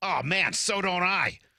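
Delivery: put-on heavy Boston accent, very high, slow and drawn out. Retelling what a middle-aged woman said about her Frenchies, in a thick Boston accent. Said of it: "thick Boston accent".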